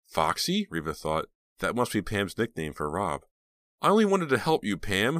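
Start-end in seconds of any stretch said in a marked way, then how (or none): 3.8-5.2 very high, loud, overcome emotional cry. [name] answers Pam as police officers move in, crying out emotionally. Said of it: "[name] cried emotionally".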